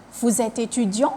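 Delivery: rising, lifting pitch at the end of étudiant. French lesson on question intonation, rising at the end on étudiant. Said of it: "I raise my voice up at the end of the sentence".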